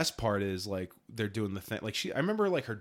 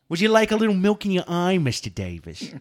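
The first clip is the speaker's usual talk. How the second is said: very loud, cocky put-on voice with British tinge; 8 semitones higher, 11 dB louder than usual. Two speakers riffing, one delivers a quoted line as an Archie Bunker impression. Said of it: "My Archie Bunker borders on British cocky".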